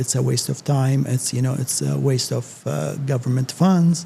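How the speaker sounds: plain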